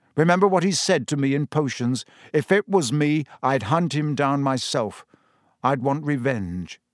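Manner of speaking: ordinary delivery, nothing marked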